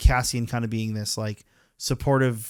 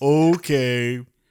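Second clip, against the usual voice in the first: put-on sarcastic tone, louder; 2 semitones higher, 5 dB louder than usual. Acting out what an Imperial might say: acting sarcastic Imperial. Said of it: "I wish the Imperials were sarcastic about it".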